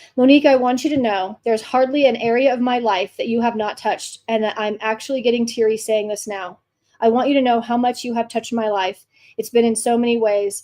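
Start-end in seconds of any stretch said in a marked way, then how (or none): none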